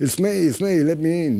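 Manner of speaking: slow, high-pitched American drawl. Retelling how a man knocked on the band's door before a gig, use Sandy Pearlman's American accent. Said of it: "there's this American accent going".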